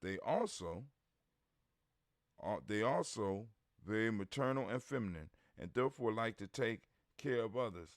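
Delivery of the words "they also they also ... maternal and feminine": ordinary delivery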